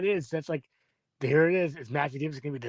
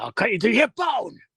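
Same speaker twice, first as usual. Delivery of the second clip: put-on horror killer yell, higher and louder; 7 semitones higher, 6 dB louder than usual. Showing a Ghostface impression after looking up the threatening dialogue: Ghostface impression, yelling. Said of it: "when Ghostface yells".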